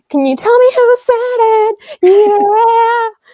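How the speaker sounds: very high, loud mock shriek. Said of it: "She ends up shrieking".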